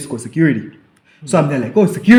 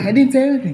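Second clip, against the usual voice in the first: high-pitched screaming yell; 10 semitones higher than usual. Retelling shouting back at a man from a distance: retelling own scream. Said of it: "I'm screaming back".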